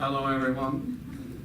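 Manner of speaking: low, flat monotone with no rises or falls. Demonstrating how to speak Japanese, a flat monotone voice.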